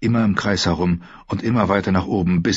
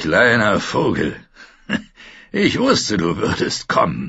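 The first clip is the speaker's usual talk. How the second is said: put-on coarse, rough, drunk-sounding voice. Narrator reading a man's line as he grabs Sansa in the dark, rough drunken voice. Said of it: "Die raue Stimme klang betrunken".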